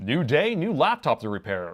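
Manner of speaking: loud, swooping, really over-animated announcer voice. Explaining the voice in his videos, speaker demonstrates his over-animated announcer voice. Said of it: "I'm using my announcer voice".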